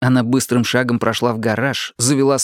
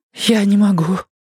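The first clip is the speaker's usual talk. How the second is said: trembling whisper, higher pitch; 9 semitones higher than usual. Marta, speaking to Stick before she leaves, in a trembling whisper. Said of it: "прошептала Марта дрожащим голосом".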